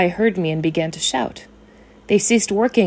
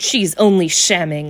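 scornful sneering, much lower pitch; 2 semitones lower than usual. Narrator reads a man answering the narrator about a fainted woman, sneering. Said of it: "he sneered".

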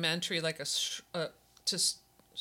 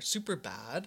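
mock valley girl speech, quieter; 5 dB quieter than usual. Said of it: "I sounded so Valley Girl there".

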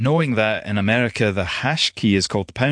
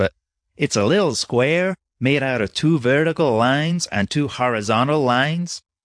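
attempted put-on American accent; 3 semitones higher than usual. Explaining the hash key to someone who didn't know it, in an attempted american accent. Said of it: "I'm sorry for this attempt at American accent".

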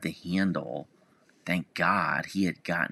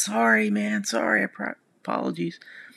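mock sheepish shout, higher-pitched; 4 semitones higher, 4 dB louder than usual. Speaker retelling calling out his car window to another driver, retelling a sheepish yell. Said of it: "sort of sheepishly yelled".

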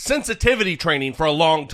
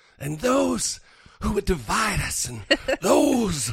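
heartfelt, high church preacher voice; 5 semitones higher than usual. Imitating Ted Cruz after a clip of his speech: mock heartfelt Ted Cruz imitation. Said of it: "I'm talking very heartfelt right now".

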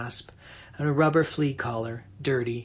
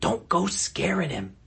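hissed, pitched-up words; 5 semitones higher than usual. Narrating a story, on the porch Tom speaks to Maureen: hissing. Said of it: "Tom hissed at her".

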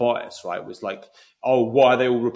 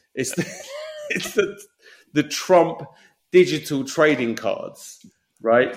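laughing through words, swooping pitch; 4 semitones higher than usual. Introducing the fun part of the podcast, laughing while talking. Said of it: "I don't know if I can stop laughing".

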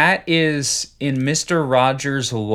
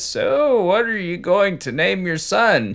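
light creak running through voice, slightly higher pitch; 6 semitones higher than usual. Acting out a character asking a new parent the baby's name: Fred Rogers voice, slightly creaky. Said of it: "sounds exactly like Fred Rogers speaking in a slightly creaky voice".

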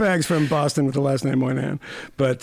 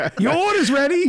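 put-on very high yelled call; 12 semitones higher than usual. Comparing the call to a bagel shop worker: imitating a bagel shop worker yelling. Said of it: "the guy at the bagel shop yelling".

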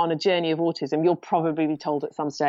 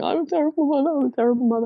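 put-on crying through sobs, pitched up; 9 semitones higher than usual. A mother recalls her reaction after a paid assessor's news, retelling her own sobbing. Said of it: "just sobbing, going".

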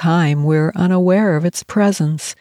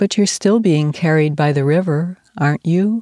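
usual speaking voice

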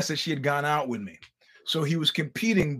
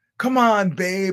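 put-on raised, half-hearted cheer with no real belief; 4 semitones higher, 5 dB louder than usual. Retelling a competitor's wife cheering him on: imitating an unconvinced cheer. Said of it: "there was no belief in her voice".

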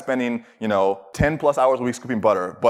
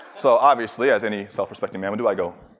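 ordinary talk, nothing marked

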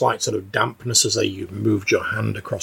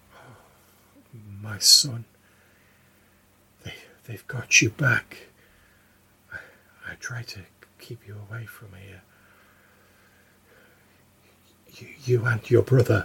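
sad, distant, echoing motherly voice; 3 dB quieter than usual. A spectre speaks to the player's character in a voice like his mother's: sad, distant, echoing. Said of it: "in a voice that sounds very much like your mother".

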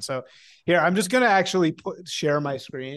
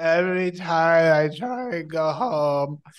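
put-on girl voice with words drawn out; 2 semitones higher than usual. Complaining about how she talks, the speaker mimics her Lexapro girl voice. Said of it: "Why is she talking in like Lexapro girl voice?".

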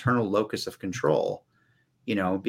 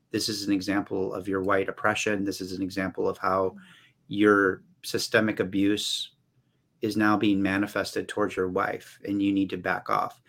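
ordinary talk, nothing marked

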